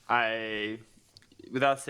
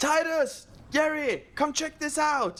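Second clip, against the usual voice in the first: high-pitched yelling call. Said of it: "yell out".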